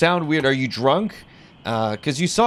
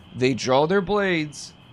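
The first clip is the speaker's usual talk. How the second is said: ordinary talk, nothing marked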